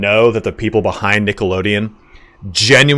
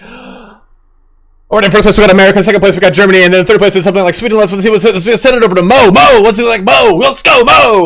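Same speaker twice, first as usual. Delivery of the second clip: very high, rattled-off, fast frantic freak-out; 11 semitones higher, 7 dB louder than usual. Retelling how Mike O'Malley hosted the rankings: imitating Mike O'Malley freaking out. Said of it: "Mike O'Malley would always be like".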